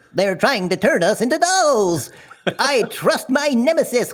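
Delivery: very high-pitched marionette puppet voice. Asked to repeat a line in character, in a marionette puppet voice. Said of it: "can you repeat that line, but in your marionette puppet voice?".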